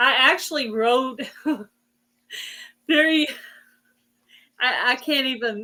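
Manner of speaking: slow speech broken up by laughter. Trying to tell about drilling something for the first time: laughing while talking. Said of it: "I can't even get the statement out without laughing".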